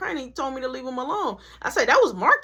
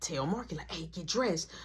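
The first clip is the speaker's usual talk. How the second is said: hushed whisper, very quiet, barely above breath; 8 semitones lower, 12 dB quieter than usual. Retelling telling a brother to get dressed: imitating own whisper. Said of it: "I'm telling him, but I'm whispering".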